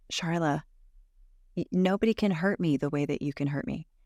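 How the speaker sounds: plain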